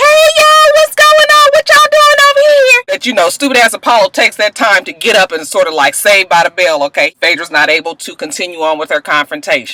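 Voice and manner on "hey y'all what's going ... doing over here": mock, very high, loud, brash, over-the-top exaggeration. Nene and Portia walk in on a confrontation and greet everyone, imitated as loud and over the top. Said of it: "They so loud and over the top".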